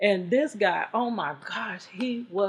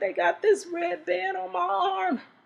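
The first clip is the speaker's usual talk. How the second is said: high, tearful voice, crying; 11 semitones higher than usual. Retelling a phone call from someone in jail: imitating someone crying. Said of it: "like he's crying".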